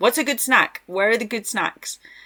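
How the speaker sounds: high-pitched voice, shouted loudly as if across distance. Retelling walking round a gas station asking him for snacks: imitating own past yelling. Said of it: "just yelling at him".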